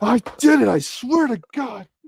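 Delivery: loud yell, pitched way up, shrill. Reporting a success while assembling a figure with another speaker: yelling. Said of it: "I'm yelling".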